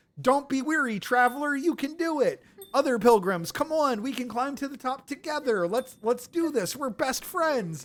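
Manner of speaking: high, happy, joyful, upbeat cheering. Retelling what Sherma says each time they find him, happy Sherma voice. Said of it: "He's all happy and joyful".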